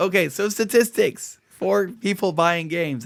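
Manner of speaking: voice going out. Moving the discussion on to game-buying statistics: losing voice. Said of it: "I apologize for my voice".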